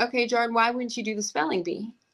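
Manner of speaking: ordinary talk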